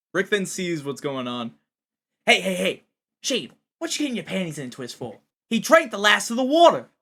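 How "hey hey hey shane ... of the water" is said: put-on New York accent, Brooklyn style. Acting out a character who stops an argument over water: Brooklyn New York accent. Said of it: "Why did you sound Brooklyn or just, like, from New York".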